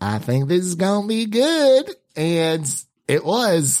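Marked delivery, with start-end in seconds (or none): 0.0-1.9 put-on thick Southern accent, high and sing-song. Retelling what an older lady said in the theater: imitating a thick southern accent. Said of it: "thick Southern accents".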